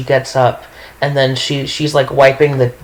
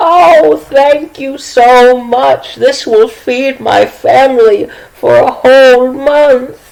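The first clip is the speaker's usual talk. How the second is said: put-on very high, loud, overjoyed, gushing old witch voice; 11 semitones higher, 6 dB louder than usual. A storyteller voices the old pastry witch given an extra gold piece, overjoyed old pastry witch. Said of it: "she is like overjoyed".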